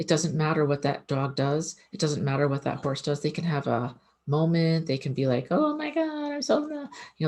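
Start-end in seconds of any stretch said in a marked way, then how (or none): 5.5-6.7 high, panicked freak-out, like an animal going crazy. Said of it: "they can go crazy".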